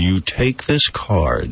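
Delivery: put-on crazed tone. Retelling a man in a car pushing his card: imitating a crazy tone. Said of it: "crazy tone".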